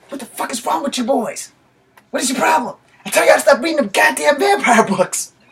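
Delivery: high, loud, angry dad yell. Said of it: "So then he yelled".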